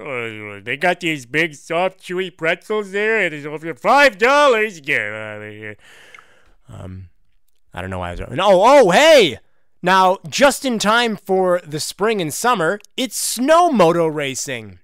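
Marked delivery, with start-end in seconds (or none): 0.0-5.8 put-on drunk man voice, much slower. Recalling a drunk message, imitating drunk Homer. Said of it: "It's like a drunk letter".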